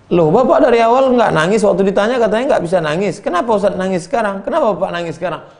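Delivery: high-pitched, fast, astonished, surprised tone.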